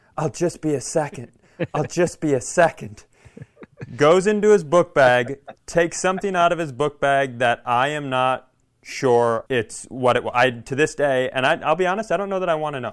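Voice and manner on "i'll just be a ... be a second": put-on loud stage whisper. Retelling how a roommate kept repeating himself while sneaking in: imitating Steve's loud whisper. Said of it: "he thinks he's whispering, but he's loudly saying over and over".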